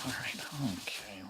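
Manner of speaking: soft, nervous whisper.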